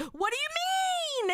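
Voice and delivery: very high, excited octave jump, long drawn-out you. Imitating an excited Boogie whose voice goes up an octave. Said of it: "And he goes up an octave".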